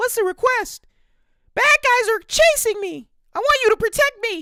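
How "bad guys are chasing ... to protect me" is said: put-on very high, very loud, clumsy girl voice. Voicing a young lady asking a sorcerer for protection, failed attempt at a girl voice. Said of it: "I cannot do a girl".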